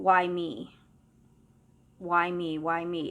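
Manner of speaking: mock very slow, tearful sobbing cries. Retelling hearing a voice in a sad building: imitating someone sobbing. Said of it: "I just heard crying, sobbing, crying".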